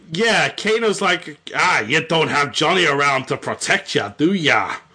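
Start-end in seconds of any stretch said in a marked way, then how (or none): 1.5-4.7 bad Australian accent slipping into Irish. Retelling the story, speaker quotes Kano taunting Sonya in a failed Australian accent. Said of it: "now it's going more into the Irish".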